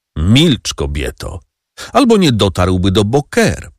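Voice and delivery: ordinary delivery, nothing marked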